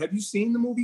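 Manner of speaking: ordinary talk, nothing marked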